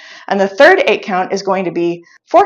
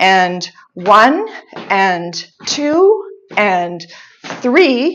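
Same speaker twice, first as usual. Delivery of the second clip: slow, drawn-out counting with rising pitch. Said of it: "I'll take it slow".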